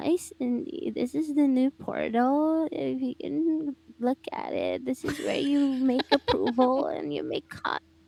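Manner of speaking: put-on babyish, cutesy bedroom voice with creaky vocal fry. Showing how she sounds in her bedroom voice, imitating a cutesy vocal fry voice. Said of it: "Ingana jud, Kring".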